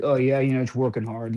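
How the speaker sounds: flat, monotone put-on. Act out Kyler answering a question about how he feels, in a flat Kyler voice. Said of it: "he just sounded so flat".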